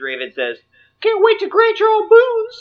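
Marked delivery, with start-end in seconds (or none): 1.0-2.6 very high-pitched and loud voice. Voicing a young emperor greeting champions: Mickey Mouse voice. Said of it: "Mickey Mouse".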